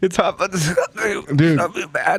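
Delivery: teasing parody with a stumbling, mocking repeat. Imitating how a friend just said the spice was not too bad: mocking imitation of a friend. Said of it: "It's the way you said that, he's like".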